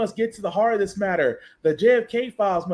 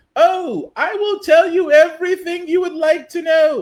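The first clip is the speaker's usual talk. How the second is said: put-on English accent, much higher, louder, slower; 5 semitones higher than usual. Acting out Epstein's former assistant offering to tell everything, Maxwell in a put-on English accent. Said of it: "I don't know why I gave her an English accent".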